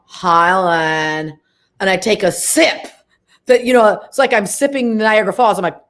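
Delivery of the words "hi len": slow, dragged-out delivery, pitched lower. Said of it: "you talk really slow".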